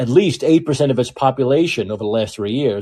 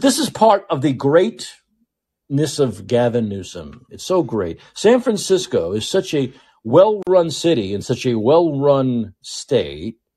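mocking, sarcastic swooping sing-song. Praising a governor ironically before a story on a store closing: sarcastic. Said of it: "sense the sarcasm?".

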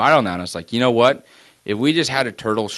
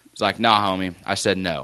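usual speaking voice

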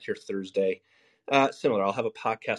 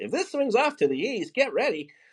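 dramatic, high, swooping weather forecaster voice; 13 semitones higher than usual. Talking about media framing, doing a dramatic meteorologist voice. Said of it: "I could do that meteorologist voice".

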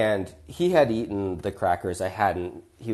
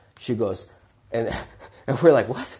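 ordinary delivery

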